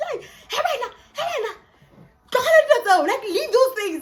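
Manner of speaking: high, loud, excited shout.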